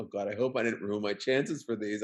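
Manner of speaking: ordinary talk, nothing marked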